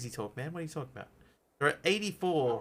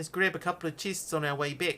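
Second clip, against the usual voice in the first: put-on, deliberate New Zealand accent; 4 semitones higher than usual. Speaking to make a Kiwi friend feel at home, in a New Zealand accent. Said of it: "My authentic New Zealand accent".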